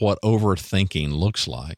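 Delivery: plain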